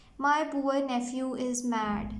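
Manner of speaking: ordinary delivery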